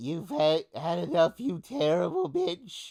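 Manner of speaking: swooping rat voice with a German tinge. Asked what voice the rat had, the speaker repeats its line in the Jubba rat voice. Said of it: "It's the Jubba rat".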